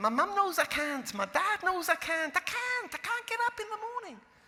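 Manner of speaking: put-on Scottish girl's accent, very high. Recalling a girl in the office, the speaker quotes her in a little Scottish accent. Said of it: "say in her little Scottish accent".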